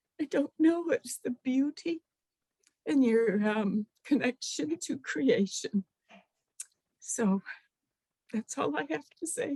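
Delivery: crying, tearful voice, soft and high pitched. Finishing remarks in a group conversation, crying. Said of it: "I don't know why I can't stop crying".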